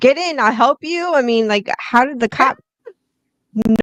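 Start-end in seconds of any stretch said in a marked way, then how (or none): 0.0-1.1 mock scream, higher and slower. Retelling what the driver in the car shouted at the cop; retelling the driver's scream. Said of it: "was screaming at him".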